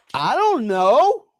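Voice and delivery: put-on very high, yelled shout. Retelling yelling back to his wife in another room: retelling a yell. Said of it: "And I yelled back to her".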